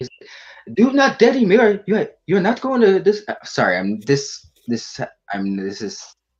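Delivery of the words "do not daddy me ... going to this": loud, high-pitched scolding tone. Retelling a movie scene, imitating Kumar's dad's voice. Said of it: "this is how he sounds".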